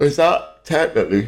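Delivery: words stretched through a high yawn. Asking a question about a figure walking with an axe, yawning while speaking. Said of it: "Sorry, I'm yawning".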